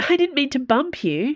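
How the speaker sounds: clearly impatient. Narrator voicing a character scrambling to her feet after being scolded about manners: impatient. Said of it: "Dana said impatiently".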